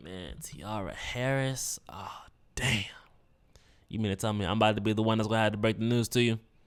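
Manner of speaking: grim, reluctant, dreading tone. Retelling how the officer sounded before breaking bad news: imitating the officer's dreading tone. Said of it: "just the way that he was like".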